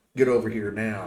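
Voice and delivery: unfriendly, mean, nasty tone. Voicing a character waving the players over: mean. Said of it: "with the kind of a mean look on her face".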